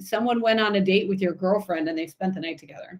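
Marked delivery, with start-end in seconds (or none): none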